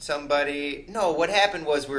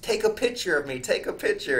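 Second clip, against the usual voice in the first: put-on laughing, taunting jeer; 4 semitones higher than usual. Retelling an arrest, quoting Julio in handcuffs: imitating Julio laughing. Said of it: "Julio's like laughing in the handcuffs".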